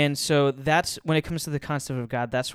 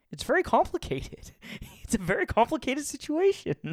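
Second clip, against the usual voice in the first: very high, swooping sing-song voice, poorly done; 12 semitones higher than usual. Borrowing a phrase while talking about Scripture: Jordan Peterson impression. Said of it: "to borrow from Jordan Peterson in my best, worst impersonation".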